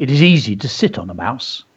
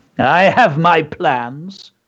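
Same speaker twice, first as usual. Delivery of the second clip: drawn-out, very slow, self-satisfied smug tone; 4 semitones higher than usual. A small mouse answers warnings about cats and danger: smug. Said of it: "said Hercules smugly".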